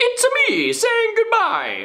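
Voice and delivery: cartoon Italian plumber voice. Asked to say the goodbye in a Mario voice, trying again, Mario voice. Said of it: "do a Mario voice to say the goodbye".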